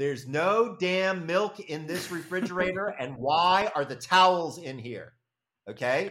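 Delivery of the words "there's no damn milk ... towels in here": high-pitched, loud yell. Retelling a sleep-deprived yell to the wife from the closet: imitating own past yell. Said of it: "and I yelled to my wife".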